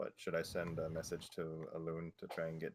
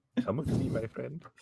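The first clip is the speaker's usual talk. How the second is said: booming, very loud, high put-on prince voice; 7 semitones higher, 11 dB louder than usual. Joking that the party's message reads like spam: voicing a Nigerian prince scammer. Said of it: "Nigerian prince".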